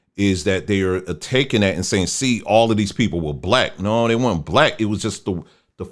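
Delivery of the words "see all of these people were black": ordinary delivery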